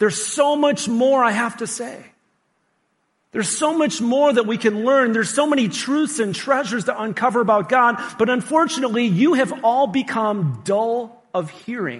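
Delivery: fed-up, exasperated, frustrated complaining tone. Teaching a group, the speaker quotes someone's words: acting out frustrated speech. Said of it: "he lets out this grunt that he's really frustrated".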